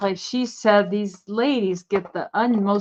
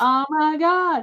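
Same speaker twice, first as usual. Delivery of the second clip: put-on panicked scream, higher; 7 semitones higher than usual. Joking about glowing uranium glassware: mock screaming as a thyroid. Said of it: "your thyroid just screaming".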